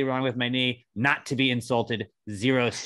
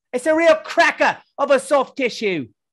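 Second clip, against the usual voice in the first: put-on British accent, shrill, very high, very loud; 13 semitones higher, 8 dB louder than usual. Mid-conversation, one line delivered in a put-on British accent. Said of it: "He's British though ... we're not going to do yeah, British accents for ten minutes again".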